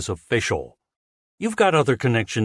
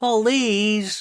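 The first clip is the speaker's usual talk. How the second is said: very high-pitched, mocking, derisive scoff; 11 semitones higher than usual. Reading a story aloud, a reporter dismissing television work: mocking tone. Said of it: "she said in a mocking tone".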